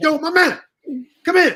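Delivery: imitated loud yelling voice. Retelling meeting x in a club: imitating x yelling. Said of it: "He started yelling".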